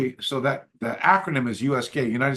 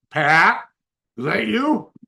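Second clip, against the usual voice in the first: raised, slow, deliberate phone-caller voice; 7 semitones higher, 6 dB louder than usual. Retelling a phone call, imitating Robert Trias on the phone. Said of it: "I get this voice in there that goes like this".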